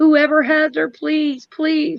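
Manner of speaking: put-on tearful, pleading voice. Acting out the plea the parents never made: acting out a crying plea. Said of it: "cry, like".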